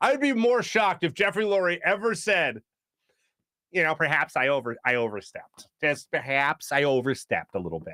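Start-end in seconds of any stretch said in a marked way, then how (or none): 3.9-7.9 put-on low Great Lakes accent. Voicing the team owner in a made-up quote: Jeffrey Lurie with Great Lakes accent. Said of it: "I give Jeffrey Lurie a, a Great Lakes accent".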